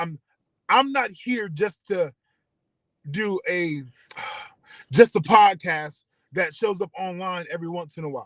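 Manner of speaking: slow, holding back tears mid-sentence. Explaining what the station is for, holding back tears. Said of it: "I'm trying not to cry now".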